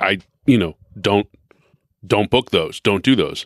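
plain

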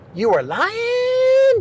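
"lying" stretched out, very high and slow.

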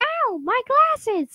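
high, slow yelp of pain. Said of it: "the person yelled out".

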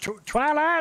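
high call that carries across a distance.

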